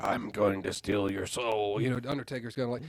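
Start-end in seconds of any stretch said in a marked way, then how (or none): 0.0-1.8 deep, very slow low voice dragging every word. Imitating a wrestler at a hospital: Undertaker voice. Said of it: "you can't have Taker".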